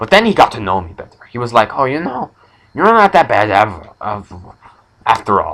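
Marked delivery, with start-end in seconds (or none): 1.8-5.5 swooping, put-on French-accented movie bandit voice. Retelling what someone who hated the speaker later said, imitating a French accent. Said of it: "He spoke with a French accent".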